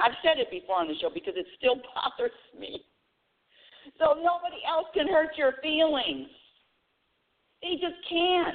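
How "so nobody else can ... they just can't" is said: full-on, high-pitched yelling. A show host talking to listeners on the show, yelling. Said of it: "I'm really yelling today".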